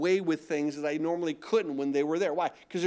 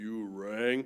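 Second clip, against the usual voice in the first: put-on phone voice, dropped deep and low; 8 semitones lower, 6 dB quieter than usual. Alone at home, the speaker recalls answering a phone call in a put-on low voice. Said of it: "get my voice low".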